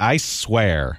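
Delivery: ordinary delivery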